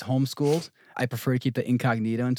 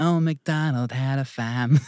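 put-on Boston accent, dropping r, farm as fam; 2 semitones higher, 3 dB louder than usual. Retelling what an Irish-born mother's son said, imitating a Boston accent. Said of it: "getting a Boston accent".

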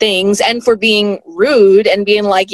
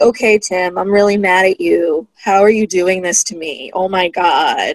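play-acted flat, listless, spaced-out voice; 2 semitones lower than usual. Imitating a reality show mother with no personality: sounding stoned, flat. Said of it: "I was gonna say stoned".

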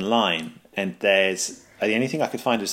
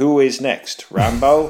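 stilted, slow, raised delivery, every word separate; 5 semitones higher, 6 dB louder than usual. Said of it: "But in a very stilted way, he goes".

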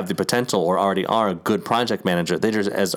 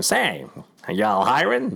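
put-on swooping, old-timey mid-Atlantic accent; 4 semitones higher than usual. Describing job hunting in the olden days, a speaker plays an applicant, mid-Atlantic accent. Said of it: "mid-Atlantic kind of accent".

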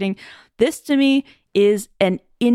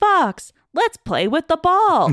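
put-on, high-pitched character voice, talking down; 9 semitones higher than usual. Complaining about a game, the speaker mimics its characters talking to the player: mimicking a game character. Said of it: "characters talk to me like".

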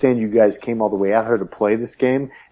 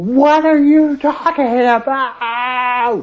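high, slow, drawn-out yell at top volume; 3 dB louder than usual. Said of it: "So I screamed at top volume".

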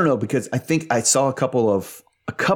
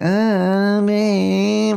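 put-on whiny voice, higher pitched; 11 semitones higher, 3 dB louder than usual. Describing an irritating tone of voice, imitating Brittany's whining. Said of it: "It's literally just the tone of voice".

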